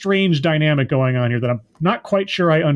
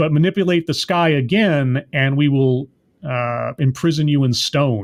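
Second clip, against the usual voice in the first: ordinary talk, nothing marked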